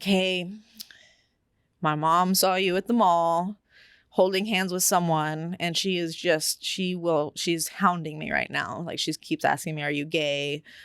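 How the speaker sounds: ordinary delivery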